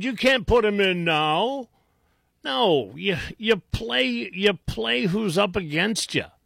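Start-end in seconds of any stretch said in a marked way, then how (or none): 0.0-1.7 high-pitched whining voice. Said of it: "sit around whining".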